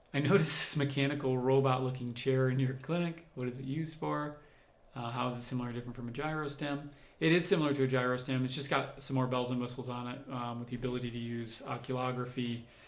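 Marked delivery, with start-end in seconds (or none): none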